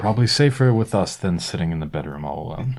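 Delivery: whispering in a character voice. Playing a character who whispers back to the others: whispering in character. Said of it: "Isaac whispers back".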